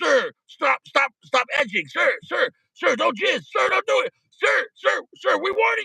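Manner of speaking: high, repeated, commanding police voice. Speaker acts out a SWAT team confronting someone, imitating SWAT team commands. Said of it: "They're like".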